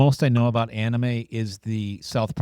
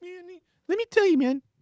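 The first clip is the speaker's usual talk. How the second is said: very high, hyped-up business guru voice. Imagining who would monopolize whose time, do a Gary Vee impression. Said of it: "That's the best Gary V impression I've".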